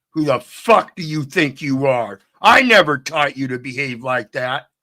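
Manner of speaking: mock-angry yelling, put-on anger. Speaker acts out a parent scolding their eighteen-year-old son, mock-angry scolding. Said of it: "Now you get even angrier".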